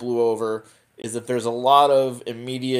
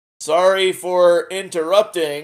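awkward delivery, pitched a touch higher; 6 semitones higher, 4 dB louder than usual. Speaker recounting a favorite scene where Aeryn walks in on a couple, imitating Aeryn's awkward apology. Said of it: "she just very awkwardly goes".

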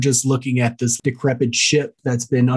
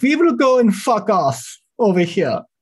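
bad Russian accent drifting German, pitched up; 9 semitones higher than usual. Joking about a flyover, voicing the Russians in a bad Russian accent. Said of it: "That is German".

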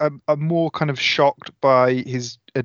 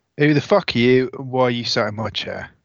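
forced, barely mustered, defiant, brash bravado; 3 semitones lower than usual. Voicing Tommy confronting an intruder in his chair: bravado. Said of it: "with as much bravado as he can muster".

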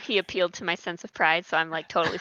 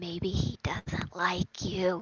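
hushed, whispered aside; 6 dB quieter than usual. In a role-play, a character whispers to Lula about an apprentice. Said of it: "I whisper to Lula".

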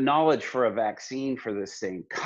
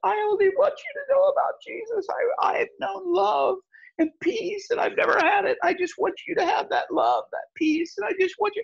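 mock very high, weeping, crying plea. Retelling what Stephanie said to the girl about Jesus, imitating Stephanie crying. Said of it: "Stephanie starts crying and she goes".

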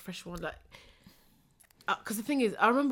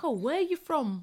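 plain

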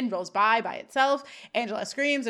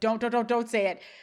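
plain

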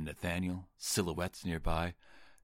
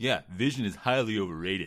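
loud, raised, staccato, each word punched out; 3 semitones higher, 6 dB louder than usual. Performing a movie line after being asked to say it that way: imitating Keanu Reeves as Utah. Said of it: "say it how he says it".

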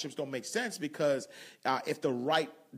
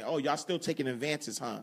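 put-on mocking tone. Quoting someone who is mocking people: imitating a mocking tone. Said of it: "mocking people".

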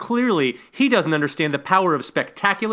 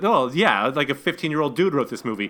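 usual speaking voice

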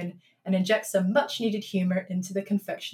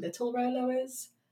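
usual speaking voice

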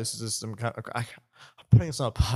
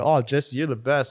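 plain

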